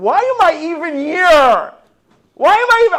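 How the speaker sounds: mock yelling. Telling a story about a hospital stay, acting out how they yelled at passing staff. imitating own yelling. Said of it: "I'm yelling at the nurses going by".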